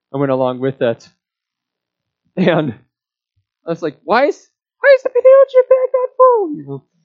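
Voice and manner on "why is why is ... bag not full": put-on very high little-kid voice, rising in pitch. Retelling a childhood complaint call: imitating own high-pitched childhood voice. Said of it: "my high-pitched voice".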